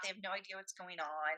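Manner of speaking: ordinary talk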